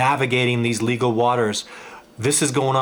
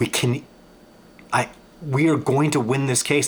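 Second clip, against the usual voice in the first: stuttering, tripping and stumbling over words. Discussing a Bigfoot case, the speaker insists they will win, stuttering. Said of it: "I'm sorry, I'm stuttering".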